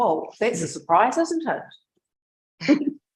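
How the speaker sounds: very slow, dry, swooping sarcastic drawl. Reacting in a meeting to statements that are no use: sarcastic. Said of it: "Do you like my sarcasm?".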